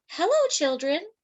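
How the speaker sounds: sweet, high-pitched, sweetly spoken tone. Narrator reading a story as someone in the hall greets the children, sweet voice. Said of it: "said someone in a sweet voice".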